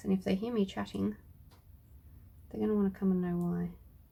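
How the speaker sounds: quiet, soft talk. Speaker talking so the kitties at the other end of the house won't hear, talking quietly. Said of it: "I'm talking quietly".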